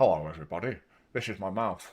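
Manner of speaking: talking from mouth's side. Showing how talking through the side of the face sounds: talking out of the side of the mouth. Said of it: "I can make my mouth talk to you through the side of my face".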